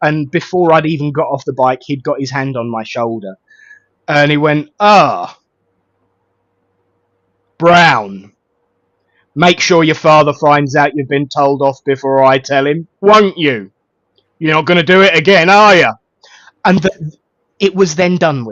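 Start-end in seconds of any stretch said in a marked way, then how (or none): 4.8-15.9 put-on booming policeman voice. Recounting a local policeman catching him as he got off his bike, booming policeman voice. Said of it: "a very booming voice".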